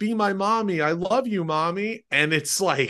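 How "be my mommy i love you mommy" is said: very high, slow, drawn-out android robot voice. Retelling a scene where an android comes on to the mother, imitating his line. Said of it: "humping her, going, like".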